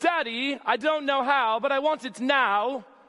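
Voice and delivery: high-pitched, drawn-out, demanding yell. Speaking to an audience, acting out a girl demanding from her dad: mock Veruca Salt demanding yell. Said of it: "She's yelling and demanding from her dad".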